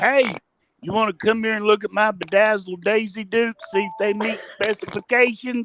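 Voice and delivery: high, mild calling-out voice. Voicing a character calling out to a guard: yelling to the guard. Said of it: "Bubba yells out to the guard".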